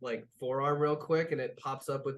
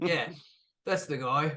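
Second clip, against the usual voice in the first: threatening, menacing tough-guy voice. Voicing a thug swinging a chain at a player: menacing thug voice.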